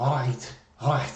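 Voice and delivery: Liverpool Scouse accent, from the back of the throat. Explaining to non-british viewers how people talk there, in a scouse accent. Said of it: "the Scouse accent is so different".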